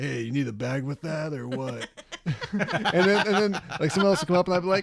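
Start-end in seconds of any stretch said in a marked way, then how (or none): 0.0-1.9 gruff, rough, surly, mean-sounding voice. Recalling playing a character with customers, in a put-on gruff mean voice. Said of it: "Now I'm a real gruff, mean guy".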